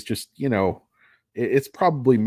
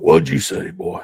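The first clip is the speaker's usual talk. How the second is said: lower, put-on menacing drawl; 5 semitones lower, 3 dB louder than usual. Acting out a threat to a young child over dinner: Sam Elliott impression. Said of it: "my Sam Elliott impression".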